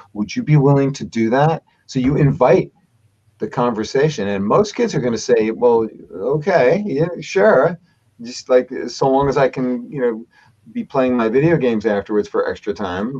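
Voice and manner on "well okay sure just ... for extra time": normal talking voice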